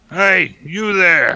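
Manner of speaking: rough, gruff, very loud shout. Narrating a voice calling out from the north to the group: gruff shout. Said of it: "you hear a gruff voice kind of shout out".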